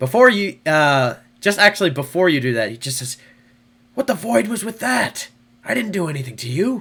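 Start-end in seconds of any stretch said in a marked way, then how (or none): 3.9-6.8 aggressive fierce whisper, much higher. Narrating a scene, voicing the man about to be pinned, in an aggressive whisper. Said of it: "an aggressive whisper".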